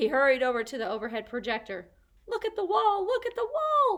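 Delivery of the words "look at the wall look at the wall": very high, tiny squeaking peeps, hamster-like. Narrator calling out to Aldo as he hurries to the projector: squeaky voice. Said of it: "I squeaked".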